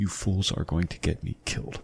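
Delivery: barely-there, very quiet, hushed whisper. Voicing a bound captive warning the group in a dark cave: very quiet whisper. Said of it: "very quietly whispers to you".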